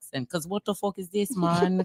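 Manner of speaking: fake, put-on Jamaican accent. Mocking someone's profile picture with friends: put-on Jamaican accent. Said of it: "You made me wanna go on my Jamaican accent".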